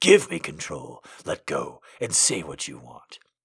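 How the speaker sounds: soft voice roughened by desire. Narrator reading a man's words to a woman in an intimate scene: voice rough with desire. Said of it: "His voice was rough with desire".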